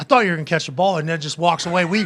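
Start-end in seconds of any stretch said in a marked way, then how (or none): 0.0-1.0 put-on straight-faced, matter-of-fact, deadpan delivery. Retelling a remark made to a photographer hit by the ball: imitating a deadpan remark. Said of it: "Deadpan straight face".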